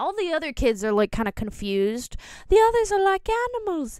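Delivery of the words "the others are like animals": put-on high British-accented voice. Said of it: "gave Charlie's voice a British accent".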